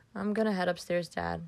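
ordinary delivery

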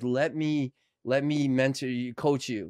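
plain

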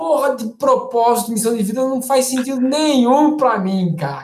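mock indignant outburst. Retelling what a man said when he came in revolted, acting out an outraged rant. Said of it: "ele veio revoltado".

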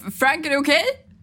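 high, loud shout from a distance. Narrating a scene, the speaker voices Mac shouting to Frank from behind the camera. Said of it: "Mac skriker från bakom kameran".

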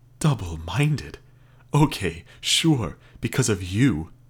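bitter. Julia answers John, who has just named her fault at the agency, letting bitterness leak. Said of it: "Julia let her bitterness leak".

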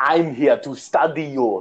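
bad, exaggerated, clichéd movie-scientist fake German accent. Quoting a stupid scientist character in a bad German accent. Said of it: "a bad German accent? He's like".

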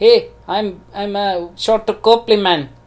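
put-on South African accent. Trying out an accent for the others after failing at Elon Musk, in a South African accent. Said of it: "a South African accent".

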